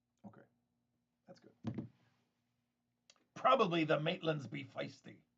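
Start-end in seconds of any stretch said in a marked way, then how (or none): 3.4-5.2 put-on talking like an old pirate. Reading a line aloud from a text, pirate voice. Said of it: "I don't know why I said that like a pirate".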